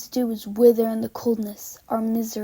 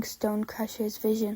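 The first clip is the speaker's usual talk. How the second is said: ordinary delivery, nothing marked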